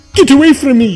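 growling. Reading a story aloud, the tiger speaks to the pig: growled. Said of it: "growled the tiger".

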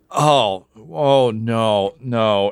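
crying out in dismay.

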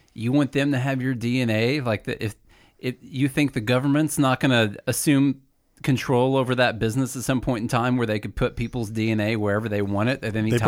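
ordinary talk

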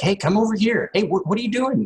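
put-on acted frustrated kid voice. Retelling how a young son calls out during multiplayer: imitating a frustrated child. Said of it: "he just gets frustrated. He's like".

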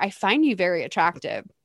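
soft, private half-whispered words. Retelling a party scene where a guy speaks to a girl: imitating someone half-whispering. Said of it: "he whispers to her".

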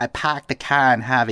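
poorly put-on Boston accent. Asked what a bad Boston accent sounds like, doing a bad fake Boston accent. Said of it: "What does a bad Boston accent sound like?".

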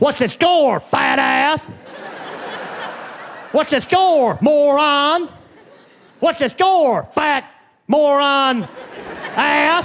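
play-acted grumbling, jeering shout. Describing a man who wants the score from the radio, retelling a shout. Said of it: "he just shouts at the radio".

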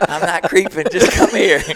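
hoarse, high, flirty gobbling voice with laughter.

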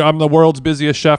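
normal talking voice

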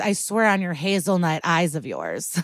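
normal talking voice

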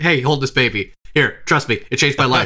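normal talking voice

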